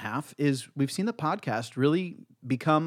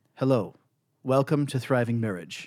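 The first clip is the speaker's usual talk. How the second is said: mechanical, robot-like delivery. Teasing about the first podcast episodes: imitating robot Bethany. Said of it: "you were robot Bethany".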